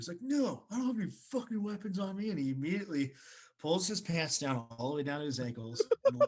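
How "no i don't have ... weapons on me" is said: mock furious, high-pitched, angry screaming. Retelling how a man answered when asked about weapons: imitating someone screaming. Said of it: "just starts screaming and yelling".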